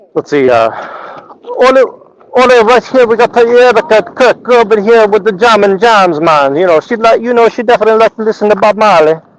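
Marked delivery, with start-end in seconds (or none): 1.6-9.2 terrible put-on Jamaican accent, pitched up. Doing commentary, the speaker switches into a terrible Jamaican accent. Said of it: "It's a terrible accent".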